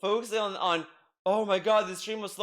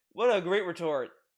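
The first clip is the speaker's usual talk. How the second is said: usual speaking voice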